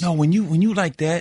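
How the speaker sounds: plain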